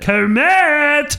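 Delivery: word stretched out, high pitched and loud. Speaker shows the Fozzie voice he's been working on: Fozzie Bear impression. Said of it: "hit you with the Fozzie".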